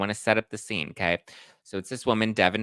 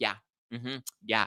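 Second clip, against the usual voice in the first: yappy, chihuahua-style little yapping voice; 4 dB quieter than usual. Retelling an argument, imitating the attorney's friend agreeing: imitating yappy chihuahua agreeing. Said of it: "like a little yappy chihuahua".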